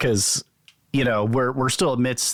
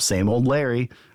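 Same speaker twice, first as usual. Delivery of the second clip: usual speaking voice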